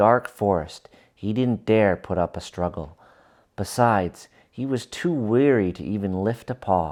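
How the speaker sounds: ordinary delivery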